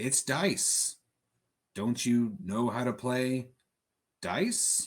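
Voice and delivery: strange, low, gravelly, rasping, two-toned voice. Narrating figures who slowly turn and address you about dice: odd high-pitched yet gravelly voice. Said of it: "address you in this kind of odd, high pitched, and very low, gravelly voice".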